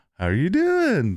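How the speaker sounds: upward lilt, rising tone ending on doing. The host demonstrates a greeting while hunting for the term: rising up tone. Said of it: "I say with a up tone in".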